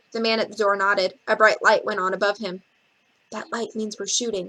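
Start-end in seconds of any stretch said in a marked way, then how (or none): 3.3-4.5 soft whisper, quieter. Reading a story where a stagehand explains the shooting light: soft whisper. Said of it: "in a soft whisper".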